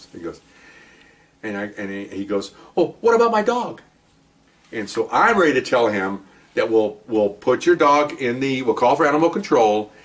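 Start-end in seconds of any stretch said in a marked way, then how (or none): 2.8-3.8 voice pitched way up, piping. Speaker retells a man's question during a fingerprinting, imitating his high voice. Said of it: "he has a high voice".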